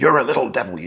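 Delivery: mock furious, fast, high-pitched yell. Recounting what an angry dad said to the client, retelling an angry dad's shout. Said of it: "shouting, loud voice, angry facial expression".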